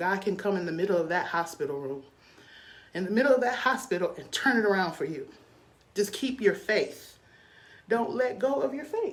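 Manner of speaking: tearful, weeping, crying through the words. Encouraging listeners to keep their faith: crying while speaking. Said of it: "I don't know why I'm crying".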